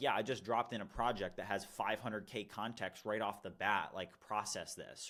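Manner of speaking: usual speaking voice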